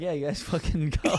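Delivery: blunt, bossy tone. Retelling how forty-year-old guys at a hardware store talked: imitating them. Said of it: "forty-year-old guys being like".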